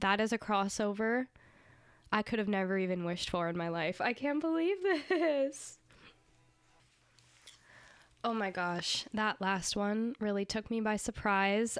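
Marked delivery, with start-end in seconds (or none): 4.0-11.8 emotional, choked up, on the verge of tears. Reacting to the last track of an album, close to tears. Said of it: "I'm almost in tears".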